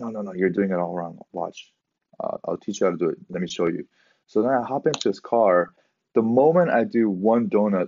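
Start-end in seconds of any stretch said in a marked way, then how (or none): none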